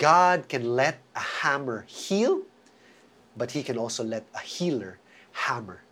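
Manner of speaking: very slow, low, deliberate, each word spaced out. Repeating the point so it sinks in with listeners, saying it very slowly. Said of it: "Let me say that again very slowly".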